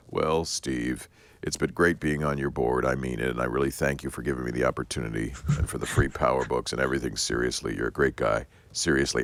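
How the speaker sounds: low, really sad, downcast, heavy-hearted voice. Al Gore calls Steve after hearing about the meeting, in a put-on, really sad Al Gore voice. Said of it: "he goes in this really sad voice".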